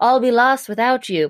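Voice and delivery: put-on British accent. Retelling a movie scene where the boss pleads with his assistant: British accent. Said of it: "but in a British accent".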